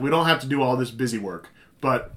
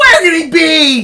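overacted mock screaming, higher in pitch and louder; 14 semitones higher, 9 dB louder than usual. Retelling an overacted movie scene over a comm: imitating Mark Hamill screaming. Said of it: "he's screaming in the comm".

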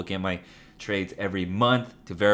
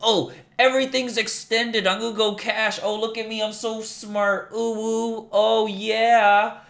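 sarcastic, very high, slow, self-satisfied smug voice; 14 semitones higher, 3 dB louder than usual. Mocking someone who brags about going cash: mocking a smug poster. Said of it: "you sound like a sheep that's trying to sound cool".

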